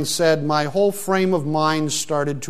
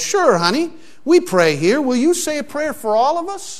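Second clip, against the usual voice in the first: mock raised voice, very high, loud; 10 semitones higher than usual. Retelling a diner waitress answering a little girl, in a loud voice. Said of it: "turned around and said in a loud voice".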